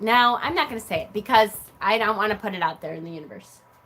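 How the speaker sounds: ordinary talk, nothing marked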